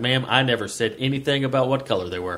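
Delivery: normal talking voice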